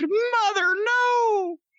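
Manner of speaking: put-on very high-pitched toddler scream. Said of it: "the kid screamed".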